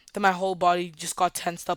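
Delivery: plain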